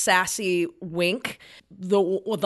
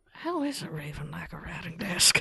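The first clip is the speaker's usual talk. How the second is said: muttered under her breath, much quieter; 9 dB quieter than usual. Narrating the scene as Debbie hangs up the stone: under her breath. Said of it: "under her breath".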